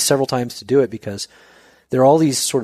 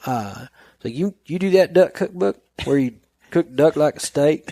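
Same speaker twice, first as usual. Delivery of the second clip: put-on Southern ranch-hand accent; 4 semitones higher than usual. Speaker retelling a man who recognized him, in a put-on Southern accent. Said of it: "I don't know why I made the Idaho guy Southern".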